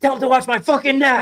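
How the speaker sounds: loud, high-pitched shout. Describing a match clip, quoting a wrestler yelling at the ref, imitating someone yelling. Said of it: "He yells".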